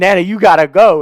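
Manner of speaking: very loud, high, urgent, frantic screaming. Retelling a car ride where the grandma could not accelerate: imitating own past screaming. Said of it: "I'm, I'm screaming".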